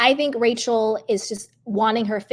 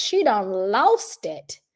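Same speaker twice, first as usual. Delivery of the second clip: put-on voice, slow and drawn out, big swoops. Talking about Bethany needing a wellness check, Nene voice. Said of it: "in my Nene voice".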